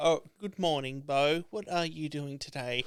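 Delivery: soft, computer-like speech. Speaker imagines his computer greeting Bo, in a Hal voice. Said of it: "it's gonna be Hal's voice".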